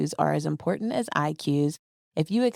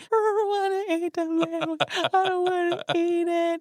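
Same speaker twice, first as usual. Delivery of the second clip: mock, very high, tearful sobbing crying voice; 14 semitones higher than usual. Retelling a brother's refusal to eat: imitating someone crying.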